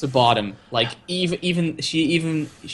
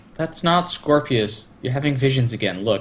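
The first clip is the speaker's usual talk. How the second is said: usual speaking voice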